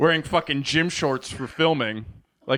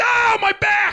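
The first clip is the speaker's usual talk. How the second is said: mock sudden pained cry, very high, raised; 5 dB louder than usual. Retelling how a woman suddenly hurt her back: imitating her screaming in pain. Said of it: "screaming in pain".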